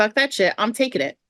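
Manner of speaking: mock-pissed tone. Retelling how another person reacted in the game, retelling a pissed-off outburst. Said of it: "Clement is like pissed".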